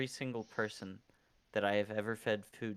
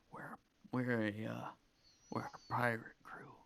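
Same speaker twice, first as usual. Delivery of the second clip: whispered, stumbling, hesitant and hushed; 4 dB quieter than usual. Warning another character in a scene that the group is a pirate crew: whispering. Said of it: "I whisper".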